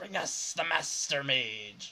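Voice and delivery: very slow, loud, hissing chorus of snake voices. Voicing a crowd of attackers in the lobby: snake-like voices. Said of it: "a bunch of snake-like voices say".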